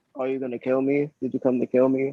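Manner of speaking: toneless, flat, deadpan monotone delivery. Recapping a scene from a show, imitating a character's reaction: monotone voice. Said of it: "In like a monotone ass voice".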